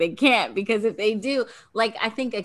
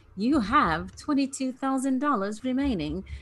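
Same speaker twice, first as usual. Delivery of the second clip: really horrible put-on British accent; 6 semitones higher, 3 dB quieter than usual. Quoting Lana calling everybody to the gazebo: horrible British accent as Lana. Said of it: "So that was my really horrible British accent".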